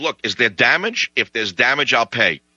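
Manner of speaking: ordinary talk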